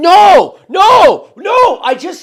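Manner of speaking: shrill, booming, very high, loud drawn-out yelling. Retelling own reaction to sending money to the wrong person: retelling own yell. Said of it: "wouldn't you kind of yell a little bit".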